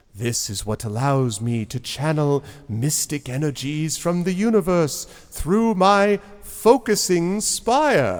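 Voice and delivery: slow, sly, secretive, well-practised delivery. Voicing a character explaining his tower's spire: little secret grin. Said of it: "he kind of gets this little secret grin".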